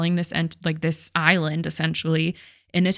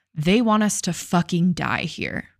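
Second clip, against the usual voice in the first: mock angry outburst in a man's voice. Telling a story, quoting a man who won't leave the building: imitating an angry man. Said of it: "And he's still pissed, clearly".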